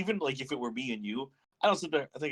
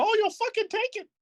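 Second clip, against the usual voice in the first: very high-pitched squeaky voice; 4 dB louder than usual. Acting out a crude joke bit, in a Mickey Mouse voice. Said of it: "Make me go full fucking Mickey Mouse".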